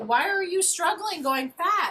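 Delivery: high, slow, baffled voice.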